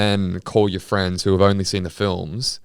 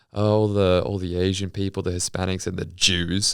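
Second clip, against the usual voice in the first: plain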